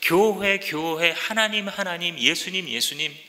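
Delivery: said mockingly.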